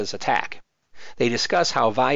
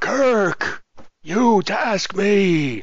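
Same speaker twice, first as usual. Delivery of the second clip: dazed, fried, spaced-out burnout voice, pitched up high; 8 semitones higher, 3 dB louder than usual. Redoing the line to show how it would sound going for a Reverend Jim impression. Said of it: "if there I was going for Reverend Jim".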